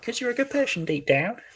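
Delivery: high, steady character voice. Performer voicing one character in a scene: higher-pitched voice. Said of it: "I think this is the higher pitched, less warbling voice".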